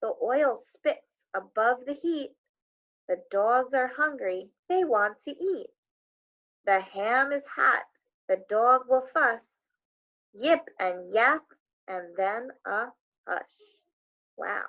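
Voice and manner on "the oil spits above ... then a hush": slow, deliberate, unhurried reading aloud. Rereading a short text aloud so listeners can pick out words, reading slower. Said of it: "Now I'm going to read it slower".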